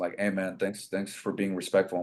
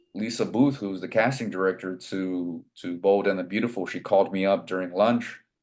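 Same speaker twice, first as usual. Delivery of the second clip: normal talking voice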